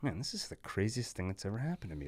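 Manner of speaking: quiet half-whisper under the breath. Showing how Chris thinks to himself, half-whispering to yourself. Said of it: "Like you're whispering to yourself".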